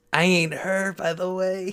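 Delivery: spooky ghostly voice. Joking around with another speaker, the speaker puts on a spooky voice. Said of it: "I'm a spooky voice".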